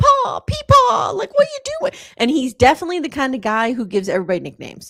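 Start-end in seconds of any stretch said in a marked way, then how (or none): 0.0-1.9 very high, loud, flustered, distressed Southern gentleman voice. Describing a pompous Southern gentleman in a documentary: imitating him in distress. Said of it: "he just talks like".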